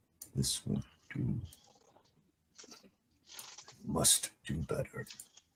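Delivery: slow, whispered mutter under the breath. Voicing Dervik reacting to news of the trade sanctions: whispering under his breath. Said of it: "Dervik whispers under his breath to himself".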